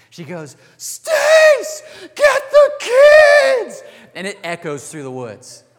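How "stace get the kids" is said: very high, very loud, slow, drawn-out shriek. Telling a story, the speaker acts out an aunt calling from the cabin: retelling Aunt Jill's scream. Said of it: "my Aunt Jill screams like I've never heard her scream before".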